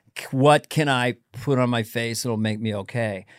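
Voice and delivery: plain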